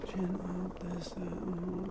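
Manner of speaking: very quiet, slow, drawn-out half-whisper. Retelling how they directed her during the shoot: imitating own weird half-whispering. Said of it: "whispering to myself, like, in this weird way".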